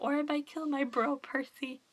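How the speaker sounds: normal talking voice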